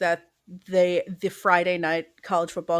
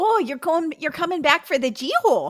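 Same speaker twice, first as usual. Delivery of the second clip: very high-pitched put-on Minnesota accent; 10 semitones higher than usual. Asked to say the homecoming name in a minnesota accent, minnesota accent. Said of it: "can you do that in the Minnesota accent?".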